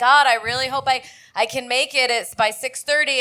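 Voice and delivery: ordinary talk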